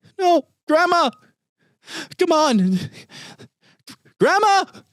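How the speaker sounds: put-on very high, loud little boy's crying-out voice. Running a tabletop game, the narrator voices a little boy crying out. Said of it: "the young voice of a little boy cry out".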